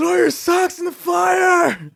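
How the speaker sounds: shrill, very high, very loud, stretched-out yell. Retelling how someone yelled out at a campfire: imitating Chase yelling. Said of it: "He yells out".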